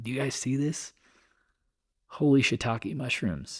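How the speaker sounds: high, hushed whisper. Talking to the people watching about how low the VIX got, whispering. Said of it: "I'm like whispering".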